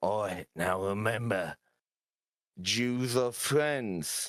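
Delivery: whispering in a character voice. Voicing a character speaking to a tamed wolf: whispering in character. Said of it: "and I whisper to him".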